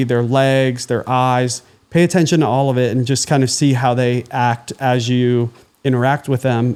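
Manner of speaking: ordinary talk, nothing marked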